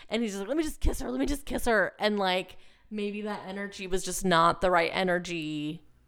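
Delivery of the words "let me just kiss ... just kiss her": fast, scrambling, play-acted panicky urgency. Retelling how John tried to make up ground: imitating John, panicky. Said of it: "he does it in a very panicky way".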